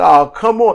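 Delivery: exasperated crowd groan. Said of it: "The crowd's like".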